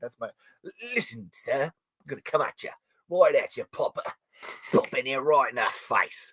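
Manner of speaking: put-on hushed British accent drifting into Australian. Addressing the other speaker, in a British accent slipping Australian. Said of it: "My British keeps going Australian for some reason".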